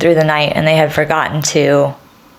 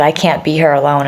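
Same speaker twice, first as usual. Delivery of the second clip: mock sobbing, tearful voice. Retelling a call to John: imitating own sobbing.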